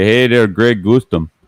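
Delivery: put-on Cajun accent, tongue held high against mouth roof. Greeting Greg on the stream in a Troy Landry voice. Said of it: "The trick to Toy Landry to talk like you got peanut butter in your mouth".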